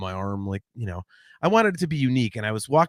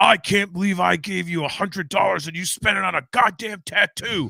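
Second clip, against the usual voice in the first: mock furious, high, near-screaming ranting dad voice; 6 semitones higher than usual. Retelling a father's angry phone call about a tattoo: imitating dad screaming. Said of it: "he is screaming at me".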